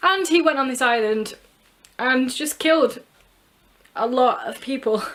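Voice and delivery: tearful, halting speech with voice breaking. Speaker summarizing a book's story, crying while speaking. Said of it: "I can't believe I'm crying".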